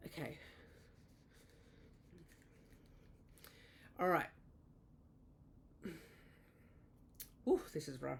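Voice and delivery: short of breath. Feeling very unwell, the speaker starts a contestant round, out of breath. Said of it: "I'm just a little bit out of breath".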